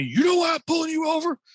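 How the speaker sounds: very high-pitched, loud, demanding yell. Retelling a traffic stop, quoting the officer: imitating an officer yelling. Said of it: "he starts yelling at me".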